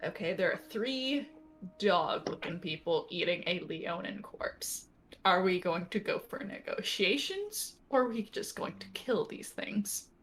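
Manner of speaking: hushed, whispered aside. Leaning back into the group in character, asking a question: whispering. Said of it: "lean back in the group and whisper".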